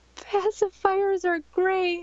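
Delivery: strangled, closing-up voice, very high, choked-off squeak. Retelling freezing up in front of everyone: imitating a voice closing up. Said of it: "my voice just totally closed".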